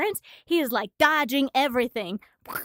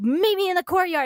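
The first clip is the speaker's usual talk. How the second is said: furious, indignant, pitched-up angry voice; 6 semitones higher, 4 dB louder than usual. Retelling a manga scene where an angry character calls another out: imitating an angry character. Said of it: "He's pissed".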